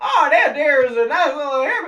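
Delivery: very high, very loud, put-on southern drawl. Retelling how a woman spoke before she broke character: southern drawl. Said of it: "the southern drawl going".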